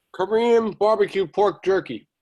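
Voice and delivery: talking through a mouthful of food, slightly high. Asked what he is eating, a participant answers while still chewing. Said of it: "what are you eating?".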